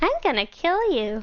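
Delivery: put-on creepy, innocent-seeming horror-movie little girl voice. Doing the horror-movie little girl who suddenly turns: creepy horror-movie little girl voice. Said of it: "that little girl in horror movies that seems innocent and suddenly she's just like".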